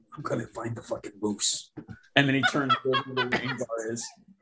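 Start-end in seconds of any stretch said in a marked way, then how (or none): 0.2-1.7 lowered, quiet voice, under the breath. Voicing a character who speaks only to another character: lowered voice. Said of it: "and he lowers his voice again".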